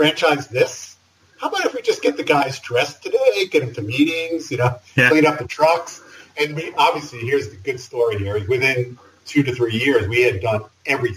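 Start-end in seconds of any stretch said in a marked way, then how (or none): 0.0-6.0 acted, sarcastic, scoffing, snarky New York delivery. Retelling a reply to a partner's franchise idea: imitating a snarky New York attitude. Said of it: "in a snarky New York attitude".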